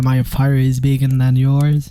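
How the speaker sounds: slow, deliberate, proper English accent. Repeating an English phrase, this time in a real English accent. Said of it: "je peux vous le faire avec un vrai accent anglais".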